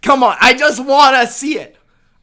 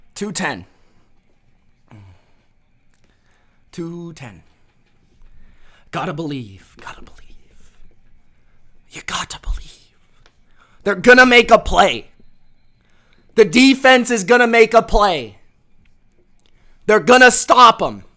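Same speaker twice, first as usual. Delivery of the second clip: hoarse, strained voice, lower; 5 semitones lower than usual. Calling the game's final two minutes aloud, losing voice. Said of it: "I'm losing my voice".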